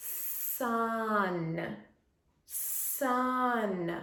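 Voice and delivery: word stretched out, elongated sounds. Modeling listening to the sounds in a word for a phonics workout, stretching the word out. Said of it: "I'm saying the word and I'm stretching it out".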